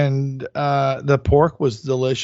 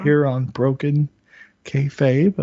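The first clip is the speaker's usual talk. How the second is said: public radio announcer voice. Host thanking the guest for joining Broken Kayfabe, in an NPR voice. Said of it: "That's my N P R voice".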